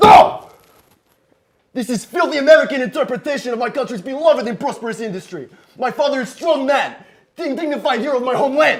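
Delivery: worked-up, agitated, very high-pitched outburst. Defending the father's picture after it is mocked: worked up, needing to calm down. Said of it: "relax. Let's calm down".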